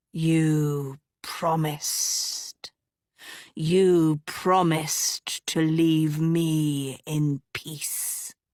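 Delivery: bitter, enraged, low, deep hiss, "me" drawn out. Narrator reads a haunted, bitter witch calling across the water, low, deep hissing voice. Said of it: "her low, deep voice hissing across the water".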